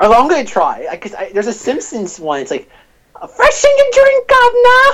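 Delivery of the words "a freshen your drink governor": shrill put-on voice, much higher and louder. Acting out a line from a Simpsons bit about rival franchises, shrill Simpsons impression. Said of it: "Has to be like this shrill voice".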